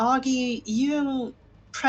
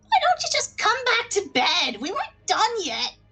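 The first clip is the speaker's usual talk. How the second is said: very high voices of goblin women in chorus; 11 semitones higher, 3 dB louder than usual. Asked what the goblins said, voicing them as a chorus of lady goblin voices. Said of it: "a chorus of lady goblin voices".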